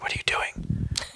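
very quiet whisper. Recounting seeing someone in the dark, asking them a question in a very quiet whisper. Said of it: "I just very quietly".

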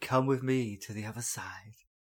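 put-on seductive delivery. Repeating the other speaker's line to tease them: imitating a seductive delivery. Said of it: "The way you said it's like she was dressed in lingerie".

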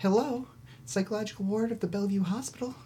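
very high, chipper, cheery receptionist-style phone voice. Telling a story, voicing the psychiatric ward answering the call, put-on cheery voice. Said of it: "you hear a cheery voice".

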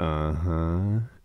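put-on deep drawn-out voice. Retelling how a player answered yes-no questions: imitating a fake deep drawn-out voice. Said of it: "So everything he said was like this".

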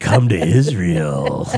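deep, salesy radio-ad announcer voice. Pitching an upcoming tour to listeners, tour ad pitch voice. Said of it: "This voice sold no tickets".

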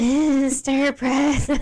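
high, deliberately creepy voice. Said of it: "That's what you sound like".

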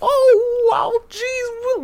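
very high, loud, squeaky little cartoon voice. Speaker describes how Toad sounds in the cartoon, doing a Toad voice. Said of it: "he kind of sounds like that".

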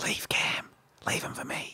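breathy, very quiet whisper, barely voiced. Voicing the cat who takes a partner's attention: imitating a cat whispering. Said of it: "he's gonna whisper".

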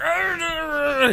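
high-pitched, garbled, growling, rambling blabber.

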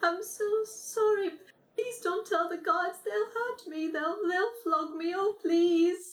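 put-on tearful, sobbing child voice, pitched very high. The narrator voices a child speaking in the scene, sobbing child. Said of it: "through its sobs".

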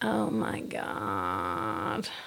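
drawled, very low voice with vocal fry. Mocking how a girl on a podcast talked: mock vocal fry. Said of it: "It does sound like your voice is fried".

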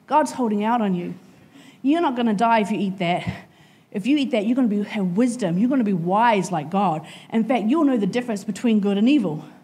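ordinary delivery

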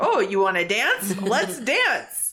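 teasing, goading, taunting call-out. Sentient dagger dodging an attack and goading the captain, Gemini taunting the captain. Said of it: "kind of like taunts the captain".

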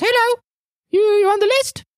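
very high little pixie woman's voice. Voicing a little pixie woman with a clipboard at the atrium: pixie woman voice. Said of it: "there's this little pixie woman with a clipboard".

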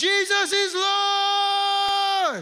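high, slow, drawn-out yell.

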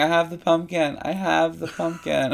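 play-acted, slow, drawn-out, half-hearted mild yell. Retelling how a woman just kept screaming during a challenge, imitating someone screaming. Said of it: "she just kept screaming".

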